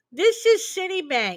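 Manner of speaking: high, pinched nasal voice, nose held shut. Showing what a suspicious phone caller sounded like, nose-pinched nasal voice. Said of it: "I'm holding my nose now".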